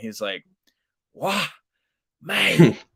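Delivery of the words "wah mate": put-on high, thick New Zealand accent. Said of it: "he's got that thick, uh, New, New Zealand accent".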